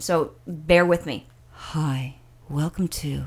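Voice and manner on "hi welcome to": low, sultry, snobby and sexy voice. Retelling a voice heard at takeoff on a flight, imitating a sexy announcement voice. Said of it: "it was extremely sexy".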